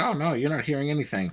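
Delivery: plain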